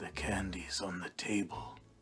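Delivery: really sinister, ominous, slow delivery. Retelling what an old man said from his kitchen: imitating a sinister voice. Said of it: "really sinisterly".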